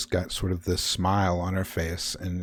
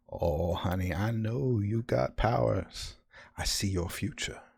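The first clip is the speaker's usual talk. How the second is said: put-on little old lady voice, quieter; 2 semitones higher, 4 dB quieter than usual. A narrator voices a character speaking to another, in a little old lady voice. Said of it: "a voice from behind you of a little old lady".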